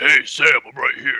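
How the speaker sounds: relaxed, easygoing, casual tone. Retelling hearing Zai call out from behind, Zai's deep voice. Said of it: "I hear this fucking deep voice".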